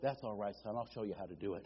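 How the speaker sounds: very quiet, very low, dropped hushed murmur. The speaker retells a manager answering a young college graduate: lowered voice. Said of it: "the manager lowered his voice".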